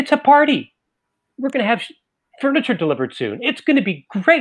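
put-on bright delighted tone. Retelling how the kid answered "what is this": imitating a beaming reply. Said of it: "he beams at me".

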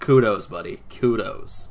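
ordinary delivery

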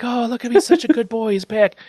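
very high, gushing, screamed cry. Retelling the family greeting grandpa like a lost dog: imitating screaming. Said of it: "all of them are screaming different sentiments".

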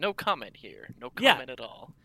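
put-on dramatic narrator voice, like a drama intro. Commenting on a story, in a Rod Serling voice. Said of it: "Then I do my Rod Serling voice".

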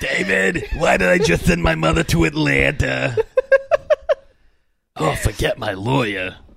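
forceful, rough delivery with a swinging rhythm. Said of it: "Dad, you sound nothing like her".

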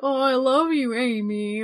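slow, gloating, teasing, mocking tone. Retelling how King Boo taunts Amy: imitating a mocking taunt. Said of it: "mocking her, being like".

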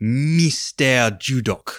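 odd unplaceable put-on accent, stress on "Mister". Recapping a scene, quoting McVeigh addressing the double agent, in McVeigh's odd accent. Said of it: "I have no idea what accent you're going for there".

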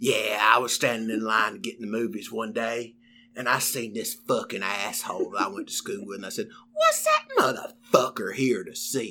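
put-on quiet, heavy South Carolina storyteller accent. Retelling one of Jeff's stories as best he can: imitating Jeff. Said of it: "I'll do it in Jeff's voice best I can".

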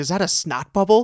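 mock grossed-out, repulsed, disgusted tone. Retelling a movie scene, acting out a character: imitating disgusted character. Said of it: "gets this disgusted look".

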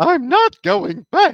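very high, very loud cartoon voice with wildly swooping pitch. Repeating a line in a cartoon voice as another speaker names it: King Candy voice. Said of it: "that's King Candy".

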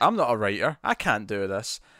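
normal talking voice

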